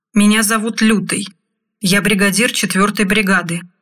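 ordinary delivery

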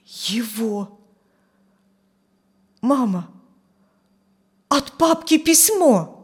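halting, faltering voice that keeps breaking off. Narrator reads a son telling his mother about a letter, in a faltering voice. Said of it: "сказал прерывающимся голосом".

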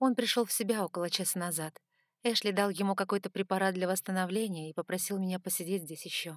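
plain

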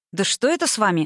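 ordinary delivery

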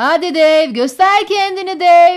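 booming, very loud, high-pitched shout. Reading Eddie calling to Dave from the kitchen doorway: shouted. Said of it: "diye bağırdı Eddie mutfağın ağzından".

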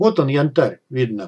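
usual speaking voice

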